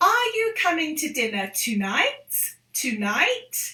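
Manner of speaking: rising, question-like lift on "tonight". English lesson on asking questions with intonation: rise on tonight. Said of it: "we also lift up, intonate our voice".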